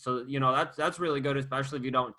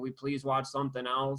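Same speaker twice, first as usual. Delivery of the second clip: mock pleading child voice, quieter; 4 dB quieter than usual. Imagining a family watching Jeopardy at dinner, imitating begging kids. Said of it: "The kids are begging".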